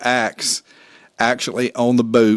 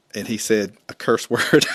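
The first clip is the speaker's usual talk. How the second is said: ordinary talk, nothing marked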